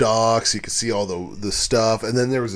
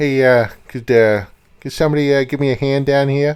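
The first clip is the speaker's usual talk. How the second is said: bad Boston accent, much higher-pitched; 4 semitones higher, 5 dB louder than usual. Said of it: "I don't have a good Boston accent".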